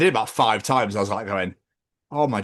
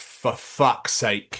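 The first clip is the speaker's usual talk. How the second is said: acted-out fed-up, irritated, annoyed outburst. Retelling being walked into at a gig: retelling own annoyed outburst. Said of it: "I was getting really annoyed".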